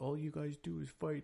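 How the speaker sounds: put-on small, sweet, high child voice. Parent retelling what their four-year-old said during family fighting, little sweet voice. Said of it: "in a little sweet voice".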